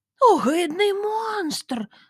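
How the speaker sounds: sudden, high, startled exclamation. Seeing a pike's eyes staring from the bag, she cries out: exclaimed. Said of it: "вигукнула Лота".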